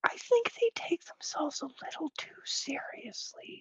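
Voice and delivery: very quiet, barely voiced whisper. Speaking in character to a companion on the way out: whispering in character. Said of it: "I kinda whisper to Gil on the way out".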